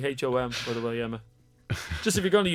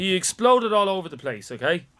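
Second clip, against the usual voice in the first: plain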